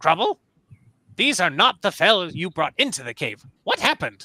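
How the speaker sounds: put-on loud, swooping, irate, scolding old woman voice. Narrating a game scene, a villager confronts Crumble: angry old woman voice. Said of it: "an angry old Harfolk woman".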